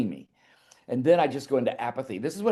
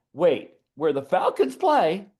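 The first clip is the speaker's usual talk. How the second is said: mock startled, panicked, rising voice with crack; 4 semitones higher, 4 dB louder than usual. Retelling the moment of hearing the venue, acting out the panicked voice crack. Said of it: "my voice cracked and everything".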